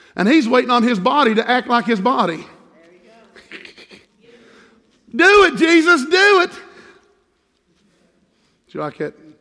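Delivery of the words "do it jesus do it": very slow, drawn-out southern accent, pitched up. Speaker urging Jesus on: southern accent. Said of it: "That had my southern on it there".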